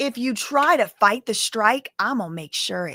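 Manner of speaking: mock menacing, predatory tone. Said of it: "sound just like a freaking predator".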